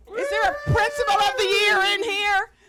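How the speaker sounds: excited, high, loud, celebratory cheering shout.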